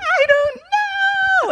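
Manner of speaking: put-on sobbing wail, very high, know drawn out. Retelling a reply to a worried mother's question: imitating own past crying.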